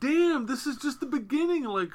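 high, amazed outburst blurted way up high.

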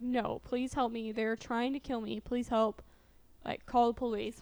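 normal talking voice

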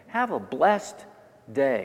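blessed lifted, tiny pause before day. Showing a new way to say a farewell: rise on blessed, pause before day. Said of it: "I raise the tone blessed and I a micro pause before the word day".

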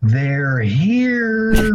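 acted, loud, high ringing call, "here" drawn out. Retelling what she suddenly said in the store: imitating a loud call. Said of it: "really loud".

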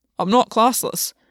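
obstinate, unyielding, stubborn. Gwyn, after a long silence, answers August's question: stubborn. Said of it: "he said, stubbornly".

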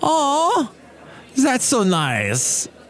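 put-on very high sing-song Russian accent. Retelling what a woman said as the speaker lifts him with a harness, her Russian accent. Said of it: "with her Russian accent".

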